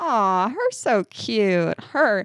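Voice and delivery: put-on baby talk, slow, cooing, sing-song. Speaker imitates how people here talk to a cute baby, baby talk. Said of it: "when people talk to a cute baby here, they go".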